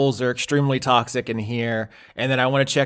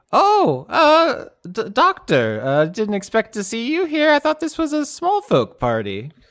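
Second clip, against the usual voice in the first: very high character voice, climbing and swooping in pitch; 10 semitones higher than usual. Voicing a character who greets the doctor at a party, in a higher voice. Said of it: "have uh, a higher voice here and say".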